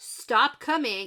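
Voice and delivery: put-on shouting. Retelling a scene where Rand stops the crowd: imitating Rand shouting. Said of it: "Rand has to shout at them".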